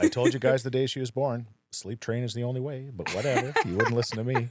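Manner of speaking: sarcasm laid on thick. Teasing the parents about their baby's sleep: very sarcastic. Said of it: "I'm being very sarcastic".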